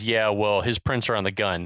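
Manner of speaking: ordinary talk, nothing marked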